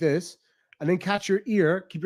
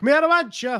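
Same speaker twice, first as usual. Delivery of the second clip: Limerick accent, pitched up; 8 semitones higher, 4 dB louder than usual. Speaker shows how Limerick people really talk, in a Limerick accent. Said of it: "That's the legit Limerick".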